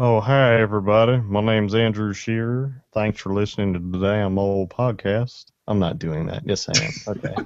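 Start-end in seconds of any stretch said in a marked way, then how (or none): 0.0-5.5 laid-on, put-on Southern accent, man's voice. A podcast guest, asked where listeners can find him, introduces himself in southern man voice. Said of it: "There's your Southern man voice".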